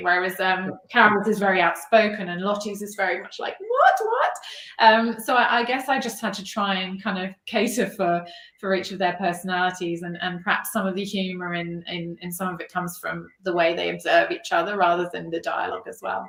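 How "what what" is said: very high, flustered, squeaky voice. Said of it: "responds in a bit of a flap".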